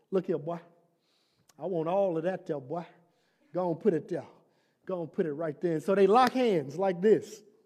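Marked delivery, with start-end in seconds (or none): 0.1-5.7 put-on soft, classic old-man character voice. Retelling a fight challenge, the speaker answers in the classic Old Otis voice. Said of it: "in the classic Old Otis voice".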